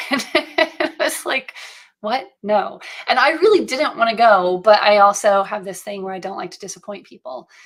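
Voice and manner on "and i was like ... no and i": usual speaking voice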